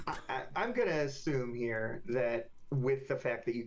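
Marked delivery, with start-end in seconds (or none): none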